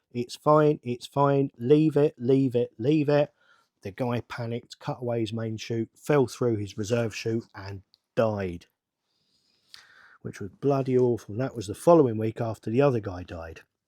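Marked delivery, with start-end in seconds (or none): none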